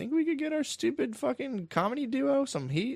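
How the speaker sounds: mock, very high, scheming girl voice. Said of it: "They were like".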